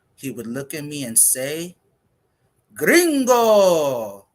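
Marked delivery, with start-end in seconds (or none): 2.7-4.1 put-on boisterous old man voice, very high, loud shouting. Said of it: "whose voice was as loud as his ears".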